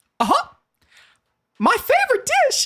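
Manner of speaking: very high-pitched cartoon mouse voice. Giving a quote about mugs, do it in a Mickey Mouse voice. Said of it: "Mickey Mouse".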